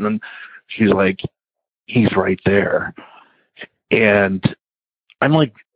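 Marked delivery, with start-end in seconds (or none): 1.9-2.9 put-on dazed, trance-like voice. Retelling what the wife said while staring behind him: imitating a dazed, trance-like voice. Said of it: "in a daze, like, in a trance".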